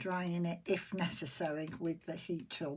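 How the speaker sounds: ordinary talk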